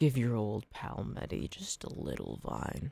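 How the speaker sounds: put-on hushed, breathy, softly coaxing creepy old-man voice. Searching the trees for one more vine, in a creepy old man voice. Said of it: "Creepy old man voice pack".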